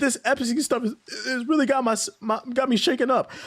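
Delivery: mock very high, crying, trembling voice. Retelling a podcast caller's words, imitating a crying, shaking voice. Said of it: "their voice is shaking?".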